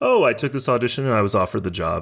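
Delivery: ordinary delivery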